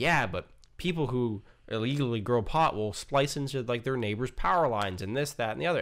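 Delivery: ordinary talk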